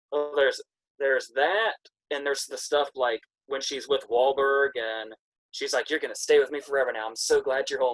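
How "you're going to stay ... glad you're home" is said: put-on gushing, smitten, lovestruck teenager voice. Retelling a film scene with Wahlberg: imitating a lovestruck teenager. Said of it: "She's like a little teenager in love".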